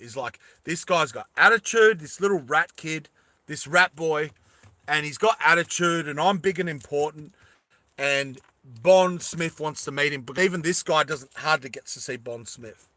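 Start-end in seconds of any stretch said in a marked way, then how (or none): none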